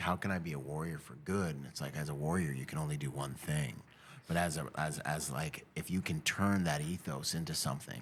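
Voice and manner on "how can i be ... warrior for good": ordinary talk, nothing marked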